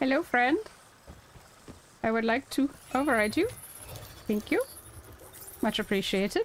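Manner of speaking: odd, weird, silly made-up character voice. Playing a game, speaker greets a 'friend' in a weird put-on voice. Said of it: "It's a weird voice I'm doing".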